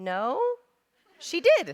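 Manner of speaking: rising, questioning lilt on "did". Acting out the daughter's answer when asked about the cookie, imitating a rising question inflection. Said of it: "And she's like".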